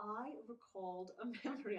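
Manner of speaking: slow speech, laughing while talking. Starting to recall a memory for another speaker, laughing while talking. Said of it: "I can't say it without laughing".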